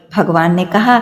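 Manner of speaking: ordinary delivery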